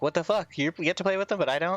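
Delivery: sudden, high, freaked-out outburst, acted. Predicting a woman's reaction to the speaker's dice roll, imitating someone freaking out. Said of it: "she's gonna freak out".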